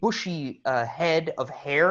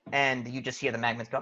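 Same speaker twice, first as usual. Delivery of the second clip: normal talking voice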